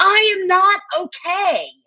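put-on high, trembling, shaking toddler voice.

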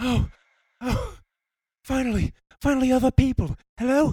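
panting, out-of-breath delivery. In an acted scary-story scene, a character finally reaches other people, out of breath. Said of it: "You're just really out of breath".

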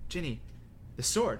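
plain

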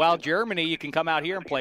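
ordinary talk, nothing marked

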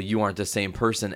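plain

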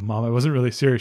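ordinary talk, nothing marked

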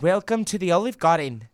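bad Scottish accent that sounds Australian. Friends trying Scottish accents, greeting diners as Saoirse Ronan, Scottish accent sounding Australian. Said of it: "just Australian".

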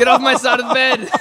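acted-out angry outburst. Retelling waking up crowded out in bed: imitating own angry outburst. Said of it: "I get pretty angry".

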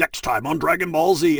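dramatic announcer voice, TV cliffhanger style. Speaker recalls practicing DBZ voices at home, doing the Dragon Ball Z narrator voice. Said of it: "I was totally imitating the narrator".

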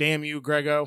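put-on Paducah, Kentucky accent, good-natured teasing tone. You retell how another shooter greeted you after shooting a 68, in Russ's Paducah, Kentucky accent. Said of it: "in his Paducah, Kentucky accent".

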